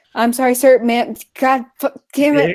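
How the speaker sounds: acted-out flustered, stammering apology, tripping over words. Retelling what a poor employee blurted out: imitating a flustered employee. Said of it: "the poor employee is so flustered that he's like".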